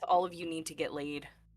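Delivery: exasperated, low, grumbled aside. Voicing Isadora, rolling her eyes at the group: said under her breath. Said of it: "Isadora rolls her eyes and says under her breath".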